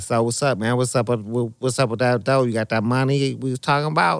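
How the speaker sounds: put-on nasal voice. Retelling what Jinx said after they finished, imitating Jinx's nasal voice. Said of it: "he talks kind of out of his nose".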